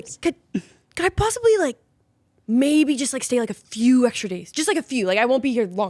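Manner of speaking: play-acted hesitant, nervous, stammering delivery. Retelling what a very nervous guy asked, imitating a nervous plea. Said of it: "He was really nervous".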